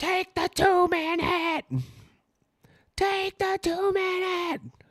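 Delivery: very high shrieking scream, pitched way up. Retelling shouting from the bathroom while streaming, re-enacting a scream. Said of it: "Just screaming from the bathroom".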